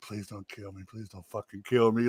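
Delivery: acted-out terrified, frightened begging plea. Retelling begging a wrestling partner before a leg drop: imitating terrified pleading. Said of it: "and I'm terrified".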